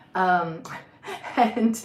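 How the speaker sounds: breathy laughing through the words.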